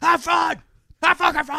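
mock, very high, repeated shouting. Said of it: "two fat guys in a room yelling at him to have fun".

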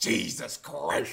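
put-on low male mutter. Telling a story about a queue, imitating the man in front muttering under his breath. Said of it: "like under his breath".

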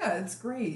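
unconvincing, half-hearted, insincere throwaway tone. Praising a game, sounding insincere. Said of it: "That sounded so insincere".

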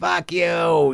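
imitated Boston townie accent. Describing aggressive masculine townies met in Boston: imitating Boston townie accent. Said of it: "there's that accent of".

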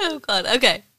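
speech mixed with laughter. Trying to continue after apologizing, laughing while talking. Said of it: "I can't stop laughing now".

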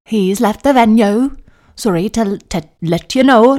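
put-on clumsy Welsh accent. Retelling how the groom's mom broke the news, in a bad Welsh accent. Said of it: "see if I can do a Welsh accent".

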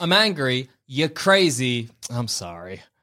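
slow, deliberate, acted delivery. Showing how the apology line is said after dropping arms: acting out the line. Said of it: "let me do that again".

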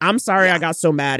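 ordinary talk, nothing marked

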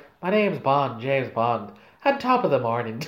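low-pitched voice with heavy Irish lilt. Mocking an actor's Bond performance in hindsight, Irish-accented James Bond. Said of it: "So was his English after a while".

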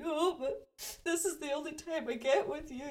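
acted crying, tearful, high-pitched voice. Retelling what was said while crying to a partner: imitating own crying. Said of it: "I start crying and saying".

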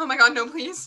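put-on shaking, trembling, begging, pleading voice. Retelling being followed to the Airbnb, she acts out her own past plea, shaking. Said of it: "I'm literally like shaking".

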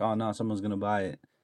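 ordinary delivery

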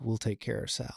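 hushed whisper. Describing a scene, the speaker quotes a man who leans over: retelling a whispered line. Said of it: "leans over and whispers like".

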